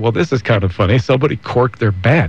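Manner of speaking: ordinary talk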